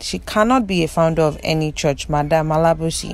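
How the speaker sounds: plain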